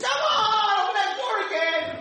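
put-on screaming. Telling a story about a prince who sees the door close, retelling a scream. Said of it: "he's like screaming".

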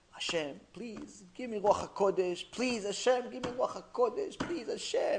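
sobbing, crying, tearful, heartfelt pleading. Retelling a criminal praying at night in the synagogue: imitating crying prayer. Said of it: "He's crying his heart out".

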